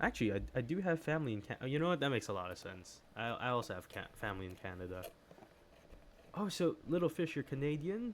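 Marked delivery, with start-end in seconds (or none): 7.4-8.1 Canadian said with odd rising question-like tune. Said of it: "why did I say that so weird".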